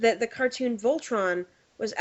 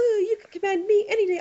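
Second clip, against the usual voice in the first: plain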